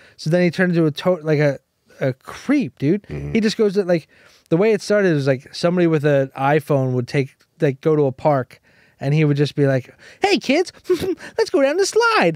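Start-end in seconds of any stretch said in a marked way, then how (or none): 10.2-12.4 put-on very high, childlike little-kid voice. Imitating a man in a video at a park addressing kids, talking like a kid. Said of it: "talks like a kid".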